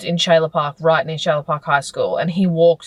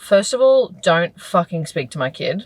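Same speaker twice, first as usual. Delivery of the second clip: ordinary delivery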